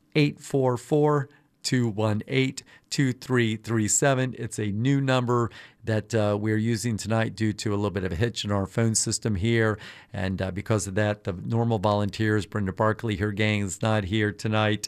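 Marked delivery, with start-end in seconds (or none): 0.2-4.4 said slowly, at a higher pitch. Host repeats the pledge phone number for listeners, saying it slowly. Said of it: "I'll say it slowly".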